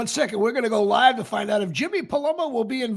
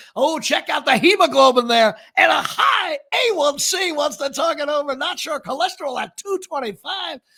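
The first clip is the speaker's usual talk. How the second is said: loud, pitched-up sportscaster announcer voice; 6 semitones higher, 5 dB louder than usual. Pitching a podcast idea, reading out test results in an announcer voice. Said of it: "I'll do it like an announcer".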